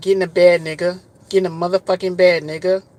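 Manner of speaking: put-on pushy, insistent, loud and aggressive voice. Retelling how a woman came on to him on the first day: imitating an aggressive woman. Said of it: "you aggressive as hell".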